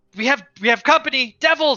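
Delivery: very high, ringing, alarmed called-out voice. Voicing a lookout spotting devils: calling out a warning in character. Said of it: "Rhea will actually call out".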